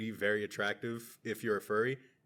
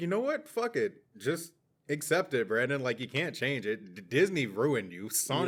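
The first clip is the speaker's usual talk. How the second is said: plain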